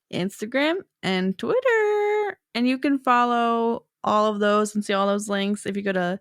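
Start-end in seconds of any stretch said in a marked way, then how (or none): 1.0-2.3 put-on high, slow Southern accent. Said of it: "to a Southern accent".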